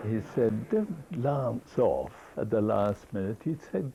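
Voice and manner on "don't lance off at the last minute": ordinary delivery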